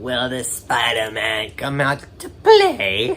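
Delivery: bad villain voice, slow, drawn out, swooping up and down. Recapping a movie scene where the villain answers Peter's call, terrible Green Goblin impression. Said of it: "That was a terrible impression".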